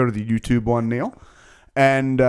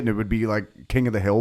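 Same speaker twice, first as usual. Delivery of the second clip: plain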